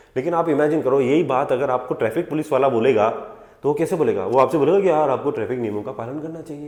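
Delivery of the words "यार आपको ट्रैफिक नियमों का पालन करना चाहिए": soft, sugary, overly sweet gentle voice. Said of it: "इतने प्यार से बोलते हैं क्या वो?".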